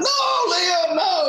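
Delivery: acted, very high-pitched, loud screaming. Telling a story about leaving a club, the speaker imitates a man screaming. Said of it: "all he's screaming like".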